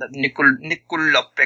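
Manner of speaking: imitated North Dakotan accent. Trying a player's name in an accent after a co-speaker asks, North Dakotan accent. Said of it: "I do the North Dakotan accent".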